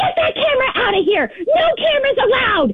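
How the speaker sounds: high-pitched, angry mock yell. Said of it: "she just starts screaming and yelling at me".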